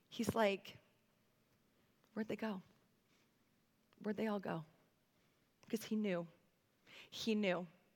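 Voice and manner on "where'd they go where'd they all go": soft, gentle voice with light sarcasm. Retelling Jesus speaking to the woman: voicing Jesus, gentle with slight sarcasm. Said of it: "with what I can only imagine is full-on gentleness, maybe a touch of sarcasm".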